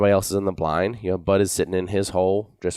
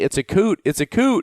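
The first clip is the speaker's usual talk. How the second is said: mock very high-pitched yell; 11 semitones higher, 3 dB louder than usual. Retelling shouting at the shooters over the decoys; retelling his own yell. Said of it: "I'm yelling".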